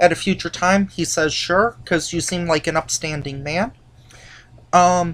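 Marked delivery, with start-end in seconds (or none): none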